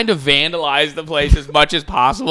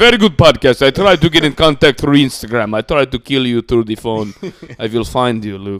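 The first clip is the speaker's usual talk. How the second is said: put-on Russian accent in English; 3 semitones lower than usual. Reading out a listener's comment on the podcast, in a Russian accent. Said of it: "This guy's Russian".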